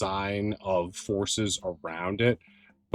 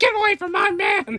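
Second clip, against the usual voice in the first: put-on mouse character voice, higher and louder; 7 dB louder than usual. Voicing a mouse who chases off an intruder: Eliza the mouse voice. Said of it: "Eliza the mouse comes back out and is like".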